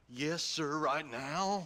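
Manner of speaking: heavily sarcastic, faux-obedient delivery. Answering an order from another character: sarcastic. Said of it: "That sarcasm's most unbecoming".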